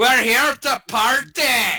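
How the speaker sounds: very high-pitched, loud hollering yell. Casting a spell and yelling in a Dent impression. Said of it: "I yell in my best Dent impression".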